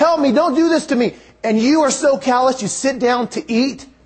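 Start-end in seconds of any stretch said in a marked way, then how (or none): 0.0-1.1 mild, high-pitched, put-on begging voice. Retelling a man in a pit begging his brothers for mercy, retelling a yell for help. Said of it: "he's yelling".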